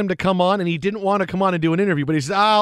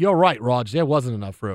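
deep, very low put-on Australian accent; 7 semitones lower than usual. Joking with others, the speaker shows how they'd go Australian, in a mock Australian accent. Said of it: "If I wanted to go Australian".

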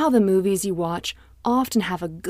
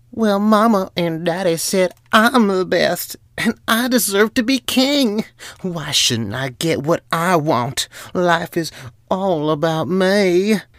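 pouty, selfish character voice; 3 semitones lower than usual. Narrating a story, voicing the official Zimri in a pouty, selfish Zimri voice. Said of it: "Zimri said in his pouty, selfish voice".

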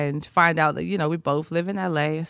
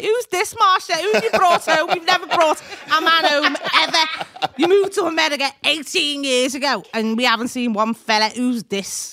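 put-on strong Liverpool accent, very high; 11 semitones higher, 6 dB louder than usual. Retelling her Liverpool family's reaction to the man she brought home, strong Scouse accent. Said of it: "strong Scouse accents".

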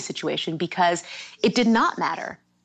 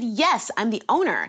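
play-acted terse, cutting, sharp, curt tone; 4 semitones higher than usual. Recounting answering a rug delivery man a second time: retelling own sharp reply. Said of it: "with my sharper tone with that one".

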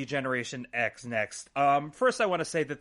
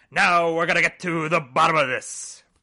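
weird, loud, sing-song hollering voice; 3 semitones higher, 9 dB louder than usual. Retelling a segment, imitating Vince McMahon's weird yelling sing-songy voice. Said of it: "goes into his weird, like, yelling, sing-songy voice".

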